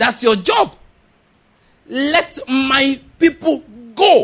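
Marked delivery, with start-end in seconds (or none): 1.9-4.2 commanding, forceful, loud, very slow and deliberate. Speaker demonstrates how a prophet's command sounds, forceful, commanding tone. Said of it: "It has a commanding tone".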